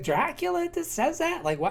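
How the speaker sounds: plain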